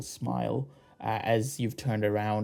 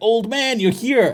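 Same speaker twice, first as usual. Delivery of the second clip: shrill, very loud, very high, booming bullhorn shout; 12 semitones higher, 12 dB louder than usual. Voicing a character calling out from behind: shouting like bullhorns. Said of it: "fucking bullhorns right at your back".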